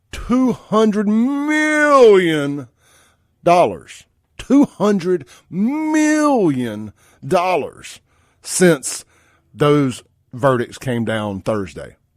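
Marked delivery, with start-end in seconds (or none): 0.1-10.0 grand, high announcer voice, million stretched out. Speaker puts on a big voice for an announcement. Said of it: "let me get my big voice on here".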